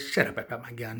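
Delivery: ordinary delivery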